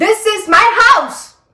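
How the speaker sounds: put-on yelling. Retelling a quarrel, she repeats what the man shouted: retelling an angry shout. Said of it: "तो ऐसे चिल्लाया था".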